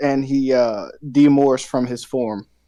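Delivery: ordinary delivery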